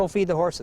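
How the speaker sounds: plain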